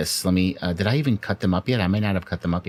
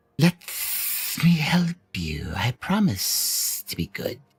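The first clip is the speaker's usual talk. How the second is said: high, sibilant, hissing whisper; 6 semitones higher than usual. Narrating a game, a voice whispers in the player's ear: sibilant whisper. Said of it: "a sibilant voice whisper in your ear".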